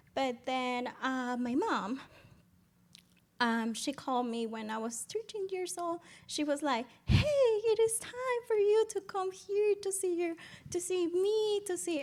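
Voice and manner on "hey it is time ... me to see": thrilled, excited and very high-pitched. Retelling mom's phone call inviting the speaker over: imitating someone excited. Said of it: "so excited".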